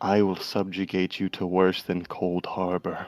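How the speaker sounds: threatening whisper. Whispering a threat in an NPC's ear in character: menacing whisper. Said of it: "I wanted to whisper in his ear".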